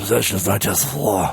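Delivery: mock-menacing low voice. Asked to try the line again, the speaker does a put-on sinister voice. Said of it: "Could you try that again?".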